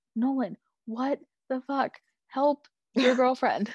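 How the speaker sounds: acted yell. Retelling watching a scene at home: retelling yelling at the tv. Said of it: "yelling at my T V".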